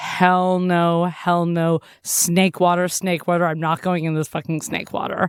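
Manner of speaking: normal talking voice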